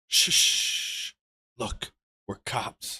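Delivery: shushing, hushing sound. Speaking in character to calm a panicking woman: shushing to quiet her. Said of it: "to quiet her down".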